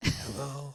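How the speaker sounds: mimicked tired voice. Retelling a phone call where the other person just woke: imitating a tired voice. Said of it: "with a tired voice".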